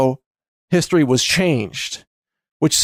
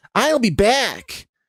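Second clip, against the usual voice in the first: pitched-up near-Chicago accent, "back" with full ah; 8 semitones higher than usual. Showing how the line sounds when you go back and listen, in an almost Chicago-style accent. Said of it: "almost like Chicago style".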